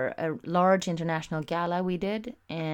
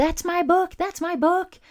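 very high, shrill, loud, excited falsetto shriek; 13 semitones higher, 7 dB louder than usual. Recalling grabbing a package out of a man's hand, retelling a falsetto scream. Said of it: "I just went into falsetto screaming".

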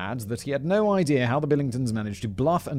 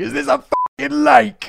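very high, rough, loud yell; 14 semitones higher, 10 dB louder than usual. Retelling a spy movie's ending where the character sails off: imitating Jason Statham's character shouting. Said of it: "you just hear him shouting".

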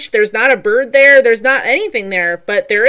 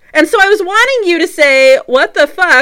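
plain

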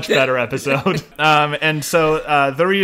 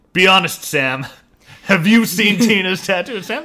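mock pointed, suspicious, threatening, intimidating tone; 4 semitones higher than usual. Retelling how a man grilled someone over a tattoo, acting suspicious. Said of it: "gets real suspicious and says".

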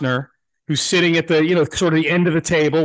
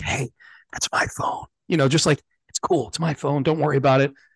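whispered, away from the mic; 4 dB quieter than usual. Retelling taking a phone back during an interview: retelling a whisper. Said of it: "I whisper, like, off mic".

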